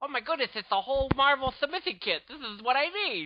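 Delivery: put-on cute little lisping voice. Retelling Scott Kurtz reacting to a Marvel submission kit, in a Scott Kurtz voice with lisp. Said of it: "He sort of got the cute little lisp".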